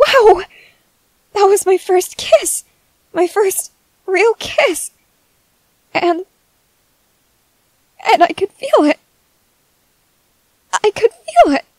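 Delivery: very high, tearful, joyful weeping. A character, just after a first real kiss, cries happily. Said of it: "I'm crying because I'm just so happy".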